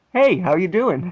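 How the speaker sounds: put-on Canadian-accented speech. Describing how a bear character talks: Snuffles' Canadian accent. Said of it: "with his Canadian accent that's just like".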